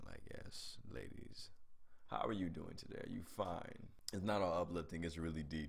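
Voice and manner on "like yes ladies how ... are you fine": put-on sexy man-bear voice, much lower and quieter. Having just woken up, the speaker plays up a very sexy man-bear voice. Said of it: "my voice sounds like a very sexy man bear".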